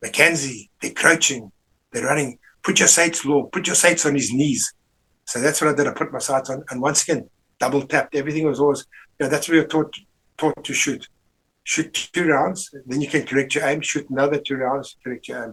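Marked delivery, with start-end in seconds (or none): 0.0-4.7 small put-on voice with Scottish accent. Retelling a voice heard in his head while shooting: Jock Hutton's Scottish voice. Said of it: "I heard this little Scottish voice in my head".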